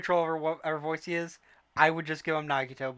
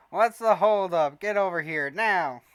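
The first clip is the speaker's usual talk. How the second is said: put-on nasal voice; 3 semitones higher, 6 dB louder than usual. Acting out a scene as Grail, in a nasal Grail voice. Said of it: "I'm trying to get nasally with Grail's voice".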